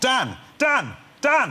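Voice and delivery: loud shout, projected as if across a distance.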